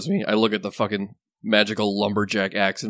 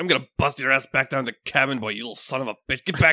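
angry shouting, higher pitch; 4 semitones higher than usual. Voicing a character chasing another around a plateau, yelling. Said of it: "just chasing Scram around and yelling".

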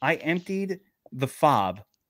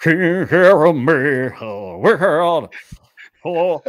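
booming, very slow, every word drawn out; 10 dB louder than usual. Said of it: "I do an [name] impersonation".

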